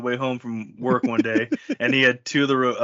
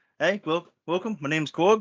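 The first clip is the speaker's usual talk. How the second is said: put-on kiwi New Zealand accent, pitched up; 5 semitones higher than usual. Showing a practised accent with a line heard before, new zealand accent. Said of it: "I've been working on my New Zealand accent".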